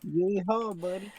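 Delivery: put-on rural country accent. Signing off the session in a country accent. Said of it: "me with my country accent".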